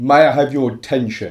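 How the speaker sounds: booming, amplified announcer-style voice. A game character addresses the ship's crew, using magic to make the voice boom. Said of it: "use Thaumaturgy to make my voice boom".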